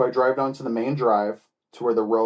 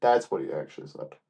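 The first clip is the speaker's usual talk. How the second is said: ordinary talk, nothing marked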